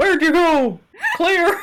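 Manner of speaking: calling out in a high pitch. Game master voices a blind guy behind the player, shouting. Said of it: "a guy sort of still like shouting".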